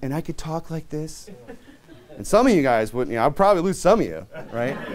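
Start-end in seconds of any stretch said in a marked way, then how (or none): 0.0-1.3 soft breathy voice, quieter. Showing how a softer speaking style would sound: soft breathy voice. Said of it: "I can get breathy".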